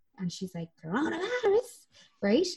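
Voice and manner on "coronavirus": squealed voice, very high pitched. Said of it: "in her voice".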